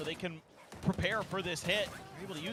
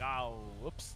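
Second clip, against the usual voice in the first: startled, surprised, caught-off-guard blurting exclamation; 8 semitones lower, 4 dB quieter than usual. Retelling how players caught off guard sounded: imitating shocked players. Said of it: "You could hear it in their voices. They're like".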